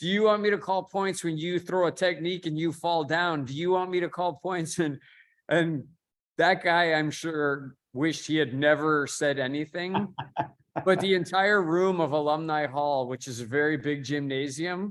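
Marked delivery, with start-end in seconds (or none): 0.0-4.8 mock insistent, demanding, very loud delivery. Speaker retells what a man said to the whole room, retelling a really loud question. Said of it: "really loud say".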